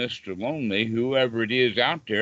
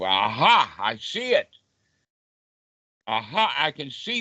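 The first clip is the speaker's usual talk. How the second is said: knowing "aha" tone of recognition; 3 semitones higher than usual. Showing listeners how to greet a thought: knowing "aha" tone of recognition. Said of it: "in that tone of voice of".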